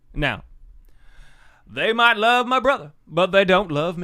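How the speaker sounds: very loud, high, big preacher voice. Showing how the author talks, doing a Dr. Gary Chapman impression. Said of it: "he sounds exactly like this".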